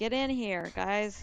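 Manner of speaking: very slow, drawn-out shouting. Calling companions into the room as a character, yelling to others. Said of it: "I'm gonna yell".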